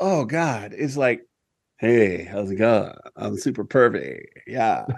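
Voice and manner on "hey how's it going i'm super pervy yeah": sleazy, pervy radio announcer voice. Mocking the announcer of a radio show he disliked: imitating a pervy-sounding announcer. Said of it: "that announcer".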